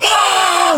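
high, loud scream at the top of the lungs. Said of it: "at the top of our lungs".

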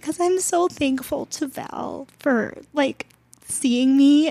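crying while talking. Telling a personal story while reading from notes, crying while talking. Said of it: "but now I'm crying".

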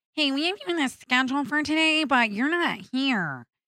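small, mousy voice. Retelling what a caller said when he missed a scheduled shift, in a little mousy voice. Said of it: "she had a little mousy voice".

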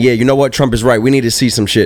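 plain

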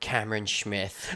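attempted Australian accent. Asked to try an australian accent, the speaker says a name: attempted australian accent. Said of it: "try your hand in an Australian accent".

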